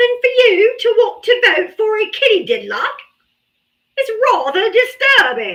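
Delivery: put-on English accent, very high-pitched and swooping. Talking to the audience about a vote, in a put-on English accent. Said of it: "Was my English accent decent?".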